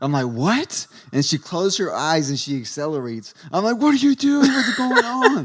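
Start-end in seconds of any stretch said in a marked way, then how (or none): 3.8-5.5 acted terrified panic, very high and loud. Retelling riding while the driver closed her eyes and accelerated, retelling scared panic. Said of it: "I'm scared as shit".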